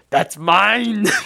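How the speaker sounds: high-pitched, manic, crazed, possessive yell. Describing a favorite shot where Arnold points at a child, imitating Arnold's crazed shout. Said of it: "the crazed Arnold pointing at the child and going".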